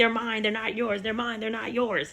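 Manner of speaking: mock insistent, looping yelling outburst. Retelling how an angry mom kept yelling at the nanny: imitating a mom yelling. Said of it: "she just kept yelling".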